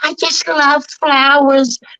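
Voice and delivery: cartoon-style character voice, pitched way up. Doing cartoon voices for the others: Smurfette voice.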